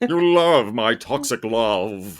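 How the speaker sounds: very slow, sultry put-on voice, "love" stretched out. Asked to do something she didn't know how to do: Tim Curry impression. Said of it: "I just basically did my Tim Curry impression".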